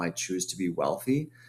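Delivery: normal talking voice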